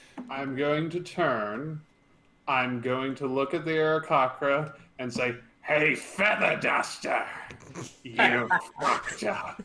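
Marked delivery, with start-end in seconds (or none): 5.7-9.7 angry, robotic voice. Speaking in character to the Aarakocra: angry Alan Rickman voice. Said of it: "he sounds like an angry, uh, Alan Rickman".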